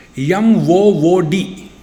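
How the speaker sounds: Malayali accent, Kerala pronunciation. Explaining a South Indian spelling, the speaker demonstrates Keralite pronunciation. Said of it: "Keralites, they pronounce like this".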